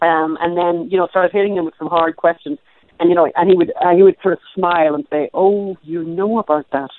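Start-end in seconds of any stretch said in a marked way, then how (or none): 5.3-6.9 put-on very soft voice, much slower. Interviewer retells a man answering hard questions with a smile, imitating a very soft voice. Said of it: "And with this very soft voice".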